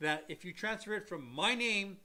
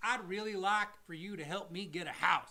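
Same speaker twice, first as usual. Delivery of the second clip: put-on Southern accent. Pretending to ask the government for help getting a house, put-on Southern accent. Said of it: "I took on a southern accent for that".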